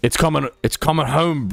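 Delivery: failed American accent that comes out British. Asked to say a phrase in an american accent, attempt that comes out british. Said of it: "I keep doing British".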